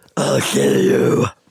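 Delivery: demon voice, dropped very low. Trying a demonic voice again after a first attempt, in a demonic voice. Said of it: "let me let me try".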